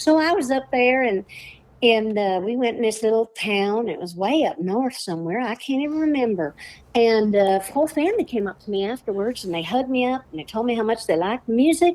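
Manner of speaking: sing-song, lilting put-on voice.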